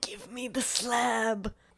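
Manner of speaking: put-on creepy creature voice. Describing a creature from a cartoon: imitating the creature from Courage the Cowardly Dog. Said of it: "that goddamn thing from Courage the Cowardly Dog".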